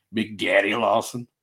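broad, big put-on country accent. Repeating the other speaker's nickname as he says it: imitating a big country accent. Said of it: "that big country accent that you gotta go with it".

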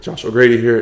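voice breaking and cracking mid-phrase. Signing off at the end with own name: voice cracking. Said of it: "my voice just cracked".

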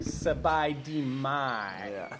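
heavy American accent on Thai, mai drawn out. Suggesting how to greet people in thai: heavy american accent on thai. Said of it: "with a really heavy American accent and be like".

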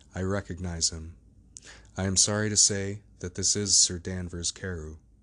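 plain reading voice

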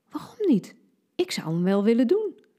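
giggling through words. One girl behind Vera answers another girl's question: giggling. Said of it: "ze giechelde".

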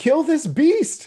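frantic, shrill, high, loud full-voice panicked scream. Narrating a man reacting to a beast, panicked. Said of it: "with just panic on his features".

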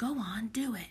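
muttered under the breath. Narrator reads a man who has just nudged a girl, muttering. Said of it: "he muttered".

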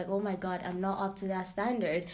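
ordinary delivery

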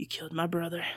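raspy, low, quiet voice. Speaker recalls a goth character's line she liked; Sophia Bush raspy voice. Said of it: "that raspy voice".

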